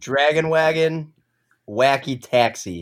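low voice with Chicago-sounding vowels. Asked by another speaker to say two phrases, in a Chicago-sounding accent. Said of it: "I sound like I'm from Chicago".

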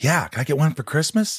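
put-on high, effeminate voice of a ten-year-old boy. Retelling a TV episode scene, imitating an effeminate ten-year-old kid. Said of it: "the effeminate ten-year-old kid".

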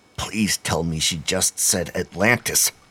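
usual speaking voice

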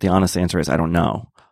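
ordinary talk, nothing marked

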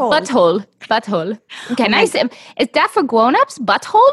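mock German tourist pronunciation. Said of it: "He sounds like a German tourist".

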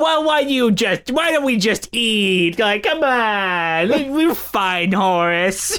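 very slow drawl, words stretched out. Comparing two stage performers of one role: Carol Channing impression. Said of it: "That's an impression, isn't it?".

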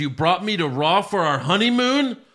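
sudden, high yelled outburst. Retelling a wrestling segment where a wife yells at her husband: imitating a yell. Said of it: "she yells".

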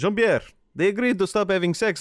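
high-pitched shout, calling out. Coming through the door in a roleplay scene, shouting. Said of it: "I'm shouting".

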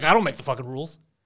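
ordinary talk, nothing marked

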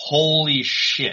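high, yelped scream. Speaker retells seeing a tweet pop up and screaming, retelling own scream. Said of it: "like legitimately screamed".

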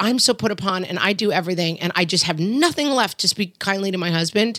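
ordinary delivery

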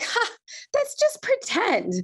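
put-on high, sing-song, swooping laugh of sixty-year-old woman. Retelling what a daughter said about the proposal, imitating a laugh like a sixty-year-old woman. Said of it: "laughs, like a sixty-year-old woman".

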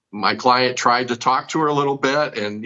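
ordinary delivery

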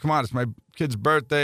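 put-on heavy New York accent, laid on thick. Ballplayer retells a guy begging him for a baseball in the bullpen, thick New York accent. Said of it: "he had a thick New York accent".

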